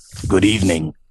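low, deep-set, gruff character voice. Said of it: "he says with a low, gruff voice".

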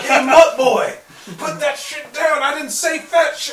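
jeering, mocking tone, high and slow. Announcing what the character will say to the enemies: in-character taunt to enemies. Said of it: "I'm gonna be like".

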